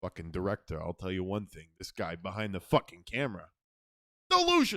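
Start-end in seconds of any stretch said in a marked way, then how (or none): 4.3-4.8 high, threatening delivery. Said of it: "Get that one, buddy?".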